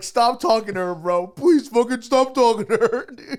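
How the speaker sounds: sobbing, very high, loud crying voice. Voicing a guy who pleads with another guy about a girl, imitating someone crying. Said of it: "like crying".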